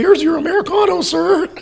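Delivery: put-on very high, loud, awkward teenage clerk voice. Speaker recalls how he sounded when Mickey first came in, pimply-faced kid from The Simpsons. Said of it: "I sounded like the pimply-faced kid from The Simpsons".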